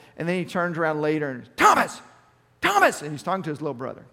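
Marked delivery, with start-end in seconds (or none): 1.6-3.0 harsh, very loud, high-pitched barking shout. Retelling a young man at the dog park calling his little brother: imitating a harsh shout. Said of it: "Just kind of real harsh voice".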